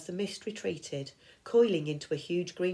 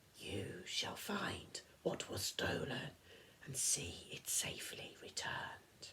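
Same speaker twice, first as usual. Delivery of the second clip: rasping, breathy, prophet-like whispered voice; 12 dB quieter than usual. Reading a prophecy aloud in the rasping voice of the Oracle: rasping Oracle voice. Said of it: "said in the same voice".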